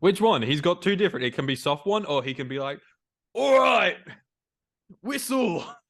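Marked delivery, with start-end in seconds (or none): 3.3-5.6 very high-pitched shouted yell. Describing Roy Kent's motivational talks, imitating Roy Kent yelling. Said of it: "I love that he yells".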